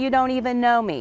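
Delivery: ordinary talk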